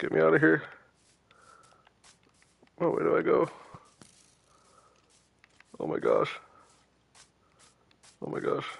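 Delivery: flustered, desperate, frantic panicked outburst. Stuck without weapons or tools in a game, panicking. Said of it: "I'm panicking".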